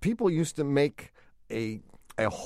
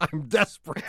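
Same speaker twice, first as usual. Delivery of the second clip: plain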